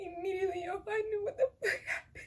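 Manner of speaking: high, tearful sobbing voice with crying breaking through.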